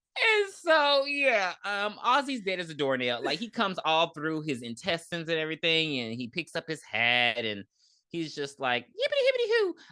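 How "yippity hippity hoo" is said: put-on very high-pitched, creepy, childlike voice. Retelling a movie scene where the leprechaun picks up his hat: imitating the leprechaun's childlike voice. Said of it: "I hate the way the leprechaun talks".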